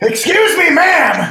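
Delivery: very loud, high, booming yell. Retelling a man's shouted question to a woman, shouting in Dean Westman's voice. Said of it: "He shouted it at Fortissimo".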